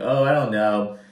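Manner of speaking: ordinary talk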